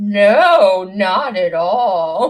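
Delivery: loud, very slow, drawn-out no. Retelling an SNL bit, imitating Bill Hader. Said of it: "Bill Hader, when he was on S N L, would be like".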